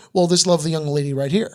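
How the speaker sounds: ordinary talk, nothing marked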